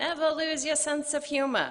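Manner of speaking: put-on New York accent, pitched high. Remembering Pops and quoting what he liked to say, in Pops's New York accent. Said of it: "in his New York accent".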